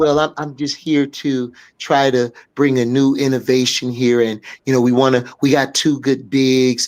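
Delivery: very low, timid, submissive, meek voice. Retelling how a man talked at his first press conference, mock-submissive voice. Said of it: "he talked like Jeff P had his balls in his wallet".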